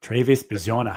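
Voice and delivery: put-on, broad-ish Australian accent. Asked to say the name Travis Bazzana, Australian accent. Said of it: "in your Australian accent".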